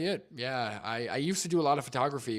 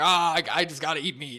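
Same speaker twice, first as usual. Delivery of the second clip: loud, higher-pitched mock confident know-it-all voice. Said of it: "he'll be like".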